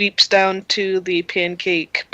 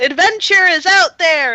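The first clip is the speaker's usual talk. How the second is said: very high, excited, drawn-out shout; 11 semitones higher, 6 dB louder than usual. A game narrator voices a character who then charges off again: excited shout. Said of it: "Kaleo shouts".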